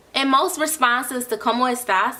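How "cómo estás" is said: plain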